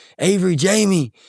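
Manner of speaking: high-pitched screaming, yelling out. Retelling how a drunk brother in the police car called out: imitating someone screaming.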